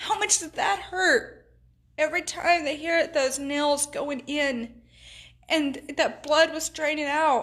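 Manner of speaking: tearful, crying voice, speaking through tears. Speaking to folks about the wounds Jesus took, crying while speaking. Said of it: "I'm crying".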